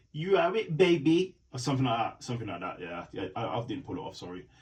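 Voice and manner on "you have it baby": put-on voice, booming, belted, slow and high. Recounting a confrontation with Cody Rhodes, trying a Dusty Rhodes voice. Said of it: "I'll try and do a Dusty Rhodes voice".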